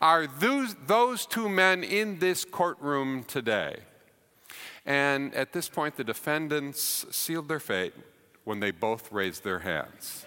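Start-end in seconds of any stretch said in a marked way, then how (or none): 0.0-3.8 mock booming voice, high and drawn-out. Retelling a trial, quoting the prosecutor asking a witness a question, booming voice. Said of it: "in a booming voice".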